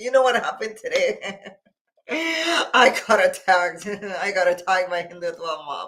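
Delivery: speaking through laughter. Imitating a man from a video who tells of being attacked: imitating someone laughing while telling. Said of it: "would you be telling your story with a laugh? Like".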